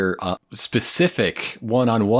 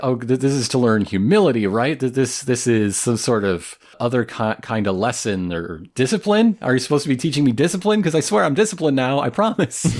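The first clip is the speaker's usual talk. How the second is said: plain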